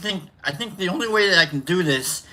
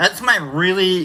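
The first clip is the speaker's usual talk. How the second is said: ordinary talk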